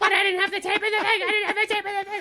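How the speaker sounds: acted out, shrill, very high-pitched screaming. Retelling a TV scene where a character forgot the tape: imitating Charlie screaming. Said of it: "he's just screaming at him".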